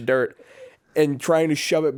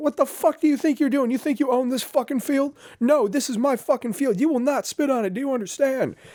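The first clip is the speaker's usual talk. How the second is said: very high, screaming drill-sergeant voice; 11 semitones higher than usual. Retelling drill sergeants screaming at a recruit who spat: imitating drill sergeants screaming. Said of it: "They're just screaming".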